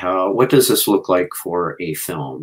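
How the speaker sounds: ordinary talk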